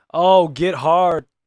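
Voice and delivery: get hard said slow and loud. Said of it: "say it with that much emphasis".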